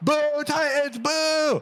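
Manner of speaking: put-on very high, rowdy, drunken shouting. Telling a story, voicing the crowd's reaction to the jest: drunken shouting. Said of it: "Drunken voices are shouting".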